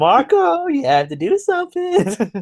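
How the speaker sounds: put-on cartoon voice, very high, slow, swooping sing-song. Recapping a show episode and voicing a character's line: Pony Head voice. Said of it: "I can really do a good Ponyhead voice".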